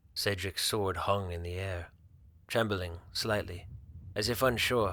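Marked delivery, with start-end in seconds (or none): none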